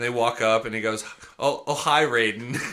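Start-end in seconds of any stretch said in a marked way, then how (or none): 1.4-2.5 slow, drawn-out character voice, every word stretched. Retelling a movie scene, imitating Tommy Wiseau. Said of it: "he's basically Tommy Wiseau sometimes".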